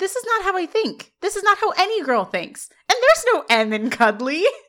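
high-pitched, indignant protesting tone.

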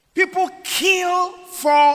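high, loud, slow, stretched-out preaching delivery.

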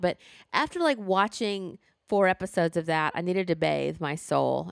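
normal talking voice

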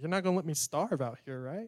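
ordinary delivery

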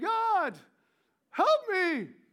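mock high crying out. Retelling Moses trapped before the Red Sea: imitating Moses crying out. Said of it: "Moses cries out to God again".

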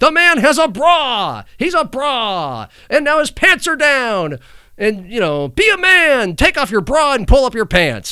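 very high, loud announcer-style yelling. Retelling an announcer's radio call of a streaker: imitating Kevin Harlan yelling. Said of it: "This time he kept yelling".

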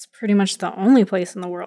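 quiet muttered aside. Speaker voices Iria as everyone starts walking out, muttering under her breath. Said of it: "kind of under her breath".

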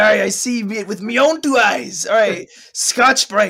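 stock put-on pirate voice, accent laid on. Debating which voice a line is said in, then trying: pirate voice. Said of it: "I guess the pirate voice can be subjective".

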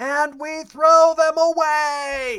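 shrill, very slow, very loud top-of-lungs yell. Recounting what they said on video, reenacting yelling at the top of their lungs. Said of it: "I yell at the top of my lungs".

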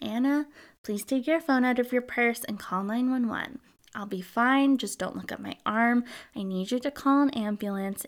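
really calm, composed, collected voice. Retelling what Jennifer said to Anna: imitating a really calm voice. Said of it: "Jennifer said in a really calm voice".

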